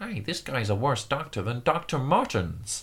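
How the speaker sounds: bad, swooping, sing-song cartoon voice. Quoting a favorite Family Guy joke, in a bad Peter voice. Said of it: "Was that your Peter voice?".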